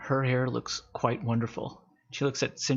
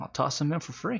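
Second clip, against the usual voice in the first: pleased, happy, cheerful tone; 3 semitones higher than usual. Game master voices a character pleased after a big sale, happy. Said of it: "he's so happy about it".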